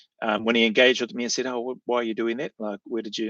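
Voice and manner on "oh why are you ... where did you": soft, calm, measured, curious tone. Recalling the man who asked why they did that; retelling a calm curious question. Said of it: "curious voice when he asked me".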